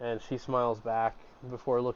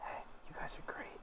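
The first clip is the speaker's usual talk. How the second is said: very quiet, soft, hushed whisper. The speaker voices a guard who looks over at Zoe: whisper. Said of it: "he he whispers".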